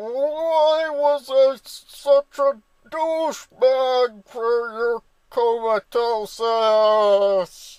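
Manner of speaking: mock anguish, very high, slow wailing.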